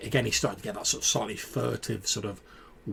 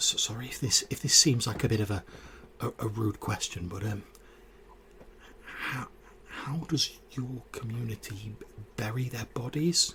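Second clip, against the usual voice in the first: spoken in a dropped, lowered voice. A character leans in closer to the listener to ask a question, lowered voice. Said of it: "he lowers his voice and he says".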